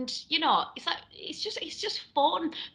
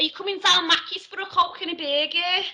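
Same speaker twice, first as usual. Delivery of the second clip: Scouse accent with very wet, slobbery mouth sound; 3 semitones higher than usual. Demonstrating the next accent in an accent lesson: Liverpool accent. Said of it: "so you gotta talk like that".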